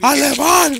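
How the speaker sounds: loud, high-pitched shout. Imagining greeting a German interviewee with a yell, shouted alemán. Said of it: "Primero lo recibiría con ese grito".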